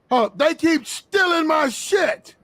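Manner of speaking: full-on, loud, high-pitched yelling. Speaker complaining to co-hosts, who ask why he is yelling: yelling. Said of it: "Why are you yelling".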